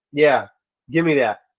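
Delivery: plain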